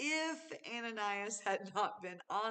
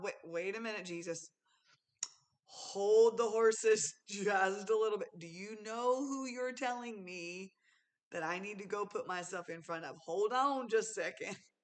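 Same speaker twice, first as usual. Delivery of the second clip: ordinary talk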